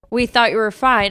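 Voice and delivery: normal talking voice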